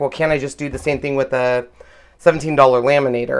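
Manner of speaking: ordinary talk, nothing marked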